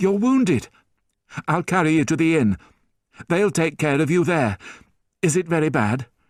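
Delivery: sudden, alarmed high-pitched exclamation. Reading a story, a young man sees a wounded girl's blood, crying out. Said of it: "and, mad with grief at losing Cosette, / he said".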